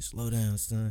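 put-on light, soft, mild country Alabama accent. Quoting his father's advice, in a little country Alabama accent. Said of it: "He had a little country Alabama accent".

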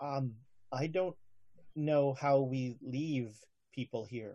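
very quiet, hushed murmur under the breath. Player voicing Taro, who thinks the crewmen speak no English: Taro speaking very quietly. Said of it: "he'll say this very quietly".

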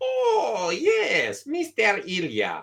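put-on Saudi Arabian accent, very drawn out, swooping. Acting out the lady at the front counter greeting a customer, imitating a Saudi Arabian kind of accent. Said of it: "it's like a Saudi Arabian kind of accent".

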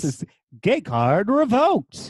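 big, loud game-show announcer delivery. Co-host introducing the show by name: game show announcer voice. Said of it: "I love how you said it like a game show announcer".

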